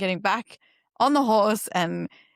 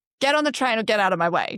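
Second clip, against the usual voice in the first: mock confident, firm and sure delivery. Imagining going in sure of what you're doing: mock confident declaration. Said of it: "sure as shit on what you're doing".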